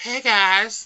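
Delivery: put-on high little-boy voice. Imitating the trailer's Spider-Man to show how young he sounds: Spider-Man little boy voice. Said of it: "He sounds like a little boy".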